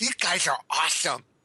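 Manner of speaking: put-on, dorky, nerdy geek voice. Reading a five-star review aloud, repeating the praise in a geek voice. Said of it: "in my geek voice".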